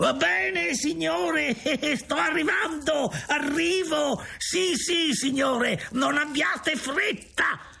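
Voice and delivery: put-on very high, shrieking, shrill old man's shout. A man calls out to the narrator as he approaches, in a shrill shouting voice. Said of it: "da una voce stridula".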